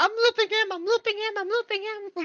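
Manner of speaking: very high-pitched, puppet-like character voice. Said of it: "he's like".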